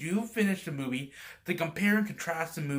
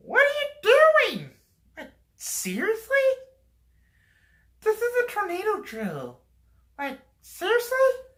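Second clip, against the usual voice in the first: very high, squeaky puppet voice, swooping all over; 8 dB louder than usual. Retelling a school tornado drill, voicing the teacher's reaction as an Elmo impersonation. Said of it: "I did an Elmo impersonation. I tried to do a woman's".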